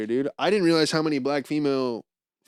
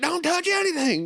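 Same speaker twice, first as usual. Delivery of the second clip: very high-pitched, shrill, acted-out yelling. Retelling how the landfill guide warned the kids: imitating someone yelling at kids. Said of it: "yelling at the kids".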